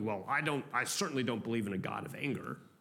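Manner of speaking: put-on, low, smug, self-satisfied, dismissive tone. In a sermon on divine anger, the speaker quotes what people often say, mock-smug. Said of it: "I often hear people say smugly".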